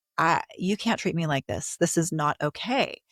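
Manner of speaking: ordinary talk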